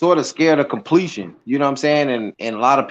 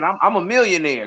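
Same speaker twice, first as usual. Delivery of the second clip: ordinary delivery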